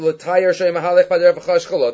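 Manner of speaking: usual speaking voice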